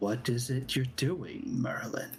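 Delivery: soft, quiet, soft-spoken inner voice. The storyteller voices a soft voice speaking into the listener's head, soft voice. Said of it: "a soft voice that speaks into your head".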